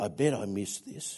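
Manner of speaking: muttering under breath. Retelling what another player says lining up a short putt, muttered under his breath. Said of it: "I can hear him mutter under his breath".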